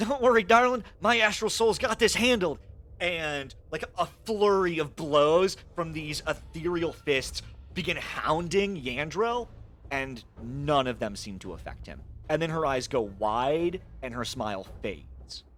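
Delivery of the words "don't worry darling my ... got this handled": smug, self-assured, smirking, very high tone. Voicing a character who reassures another before attacking: proud, smirking tone. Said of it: "proudly, like, with a smirk, and she says".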